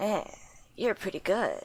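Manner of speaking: put-on gruff soldier voice. Showing off practiced voice acting after being asked to hear it: Solid Snake voice. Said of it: "That's a Solid Snake line".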